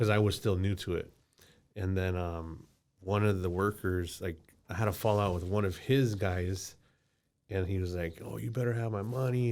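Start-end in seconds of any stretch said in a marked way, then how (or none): 8.2-9.5 put-on crazed aggressive voice, higher pitch. Retelling a fallout with a worker demanding money: imitating someone talking crazy. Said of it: "and just, like, talking crazy".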